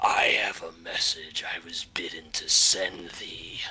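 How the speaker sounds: creeping, insidious, sinister disembodied voice. Game master voicing a voice the players hear in their heads, insidious. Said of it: "a very just uh, insidious sounding voice".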